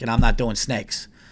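normal talking voice

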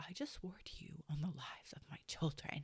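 put-on whispery, breathy, aggrieved, upset outburst. Retelling his words after she bypassed his oath: imitating someone upset. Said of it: "he got so upset".

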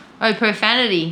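ordinary talk

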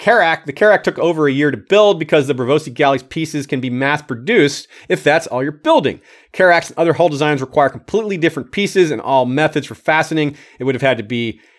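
ordinary talk, nothing marked

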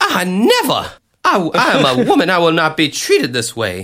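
put-on Southern belle voice. A podcast host imagines a man in drag being caught, Southern belle voice. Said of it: "I had to make him a Southern belle".

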